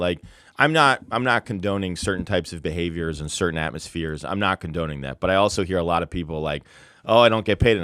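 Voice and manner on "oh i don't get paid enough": put-on complaining, whiny tone. Speaker mocking people in the industry, imitating someone complaining. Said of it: "choose to complain about it".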